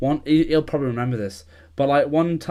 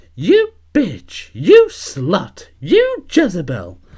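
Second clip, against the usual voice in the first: loud, swooping, squeaky cartoon mouse voice; 5 semitones higher, 8 dB louder than usual. Retelling what a friend said to his husband, in a Mickey Mouse style voice. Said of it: "like in the proper Mickey Mouse style voice".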